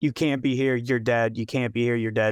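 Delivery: ordinary talk, nothing marked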